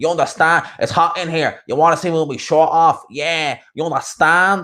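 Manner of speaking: heavy, bad, high, hard Dublin accent. Mimicking how some people in Dublin talk, in a real hard Dublin accent. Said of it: "I'm going to do a real hard accent".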